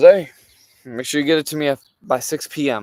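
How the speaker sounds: very loud, put-on, snide, snarky tone. Retelling someone's remark about a deadline: imitating a snarky remark. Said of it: "makes some snarky remark".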